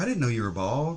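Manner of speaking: acted, catty, snarky, passive-aggressive tone. Retelling a woman's remark about being bald: imitating a snarky remark. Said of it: "she kept making these little snarky remarks".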